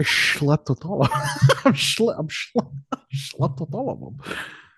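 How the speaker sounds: put-on Scottish accent. Riffing with the others on the podcast: Sean Connery impression.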